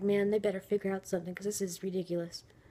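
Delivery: ordinary talk, nothing marked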